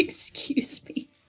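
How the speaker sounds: soft, voiceless whisper, off mic.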